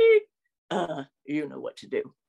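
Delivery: big, dopey, dim-witted voice, low and creaky. Imitating a friend's answering machine greeting: big dumb Patrick Warburton voice. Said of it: "It's that big dumb voice".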